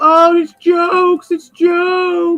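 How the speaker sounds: very slow, high, drawn-out weepy sobbing, words stretched. Retelling what someone said during a discussion: mock crying. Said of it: "And he's crying".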